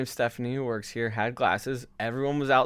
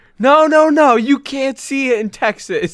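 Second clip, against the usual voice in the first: very loud, very high, drawn-out scream; 13 semitones higher, 11 dB louder than usual. Retelling how an intern burst through a back door: imitating someone screaming. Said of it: "this intern just screams".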